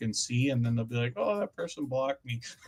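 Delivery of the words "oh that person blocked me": mocking, put-on internet troll voice. Describing people who check who blocked them, the speaker mimics a mocking internet troll voice. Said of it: "my impression of the, the trolling kind of mentality there, or voice".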